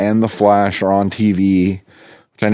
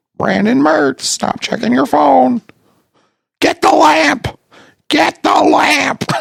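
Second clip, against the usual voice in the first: very high, raspy, squawking parrot voice. Speaker does a talking-parrot bit at Brandon Mertz; Iago parrot voice. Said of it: "Do I sound like a parrot?".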